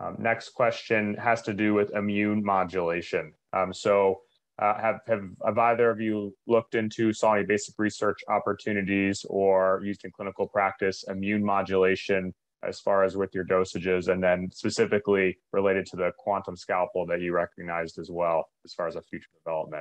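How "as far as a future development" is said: talking a little fast. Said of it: "probably talking a little bit fast".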